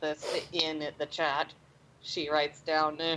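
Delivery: ordinary delivery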